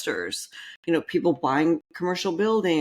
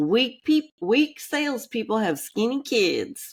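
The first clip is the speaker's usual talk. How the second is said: heavy Southern drawl, pitched up; 6 semitones higher than usual. Quoting a sales speaker's line about weak salespeople: Zig Ziglar Southern accent. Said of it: "when he says it with his dang Southern accent".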